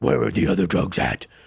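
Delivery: very low, creaky, gravelly growl.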